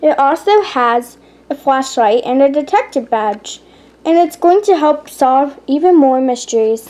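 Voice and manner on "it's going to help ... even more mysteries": ordinary delivery, nothing marked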